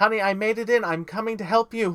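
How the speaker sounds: very loud, high-pitched calling-out shout. Game narrator voicing Christine calling to Honey from behind, yelling. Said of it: "you hear Christine behind you yelling".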